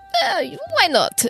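rasping, very high-pitched voice. Voicing a character accepting an offered cigarette: raspy voice. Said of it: "Your voice doesn't get that raspy".

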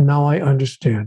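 normal talking voice

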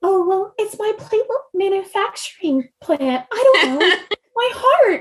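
very high, sweet, innocent voice. Voicing quirky things from the text as you hear them, in a sweet, high-pitched, innocent Rebecca Soler voice. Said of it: "really like sweetly high pitched and just like very innocent sounding voice".

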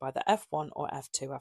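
ordinary delivery

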